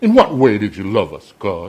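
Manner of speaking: mock, loud, swooping ungrateful complaining. Speaker acts out people complaining to God: mock ungrateful complaining. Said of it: "That was their tone of voice".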